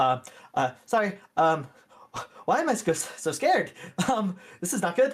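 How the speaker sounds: flustered stammering. Playing a character trying to start the ship and making mistakes, freezing up. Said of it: "freezing up a little bit".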